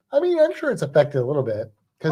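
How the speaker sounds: plain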